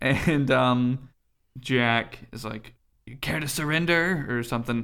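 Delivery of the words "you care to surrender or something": theatrical, put-on stock pirate character voice. Recapping a game fight, quoting Jack's line, Jack pirate voice. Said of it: "All my pirate voices are the same".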